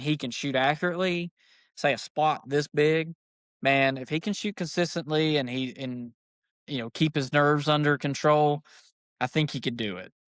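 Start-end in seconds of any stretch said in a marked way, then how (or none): none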